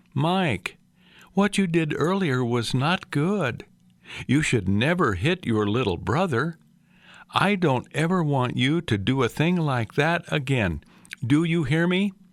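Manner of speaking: calm, smooth, composed, even-tempered motherly reproach. Retelling a mother's scolding about hitting a little brother: imitating quiet, calm talk. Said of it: "She talked so calmly and smoothly".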